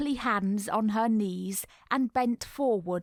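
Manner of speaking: ordinary delivery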